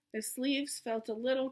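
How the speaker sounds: ordinary delivery, nothing marked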